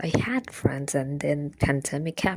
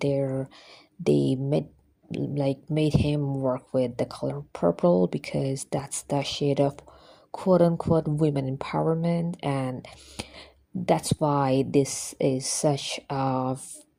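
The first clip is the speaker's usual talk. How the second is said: ordinary talk, nothing marked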